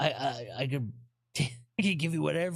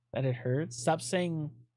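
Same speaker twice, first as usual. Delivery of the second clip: ordinary talk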